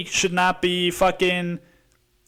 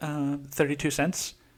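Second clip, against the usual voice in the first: snide, snotty, bratty put-on tone; 4 semitones lower, 8 dB quieter than usual. Retelling a customer's complaint about thirty-two cents: imitating a snotty voice. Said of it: "the bitch voice".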